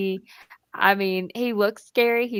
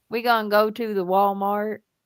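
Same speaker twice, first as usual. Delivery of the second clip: twangy Eastern Kentucky speech. Imitating a husband with a twang, in an Eastern Kentucky twang. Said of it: "That's a great impression".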